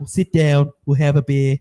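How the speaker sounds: low English accent with an Australian lilt. Trying to imitate an Englishman, an English accent with Australian lilt. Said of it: "Still still got that Australian lilt to it".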